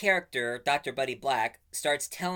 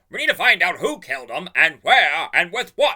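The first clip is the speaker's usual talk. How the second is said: very loud, all-out shouted line; 4 semitones higher, 10 dB louder than usual. Quoting a favorite line from a movie of the board game, reenacting a shout. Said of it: "There's no need to shout".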